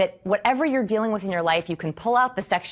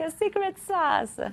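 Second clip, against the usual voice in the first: bad fake Italian accent, much higher pitch; 10 semitones higher than usual. A speaker describing what they teach, in a horrible Italian accent. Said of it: "the horrible Italian accent".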